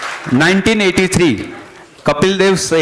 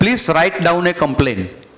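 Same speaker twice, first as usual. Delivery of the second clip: ordinary delivery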